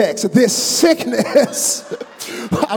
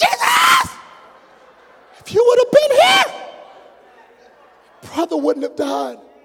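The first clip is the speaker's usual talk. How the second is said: mock furious, very high, shrill, swooping angry shout. Retelling the sisters reproaching Jesus after their brother died: imitating someone angry. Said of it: "they were so mad".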